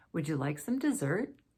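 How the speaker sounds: pitch climbs on the word dessert. Teaching English intonation, reading an example yes-or-no question with rising intonation. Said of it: "rising intonation".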